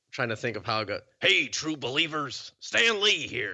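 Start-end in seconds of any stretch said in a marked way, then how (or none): 1.2-3.6 spitty, throaty voice, high and slow, drawn out. Asked to let the others hear a bit, the speaker does a Stan Lee impression. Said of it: "a lot of spit in the back of your throat".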